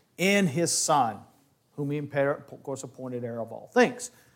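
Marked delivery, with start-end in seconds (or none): 0.2-1.2 slow, with in leaned on hard. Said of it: "I believe the in is probably more appropriate".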